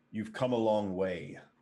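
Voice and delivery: low, deep voice of a giant. Game master voicing a giant speaking in Giant to the players, deep giant voice. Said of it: "a deep voice comes out".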